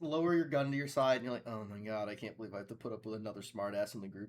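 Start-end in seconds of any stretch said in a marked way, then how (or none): 1.5-4.3 low, quiet private mumble, half to oneself. Voicing an eye-rolling character's thought about another smartass: mumbling to oneself. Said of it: "kinda mumbling it to yourself".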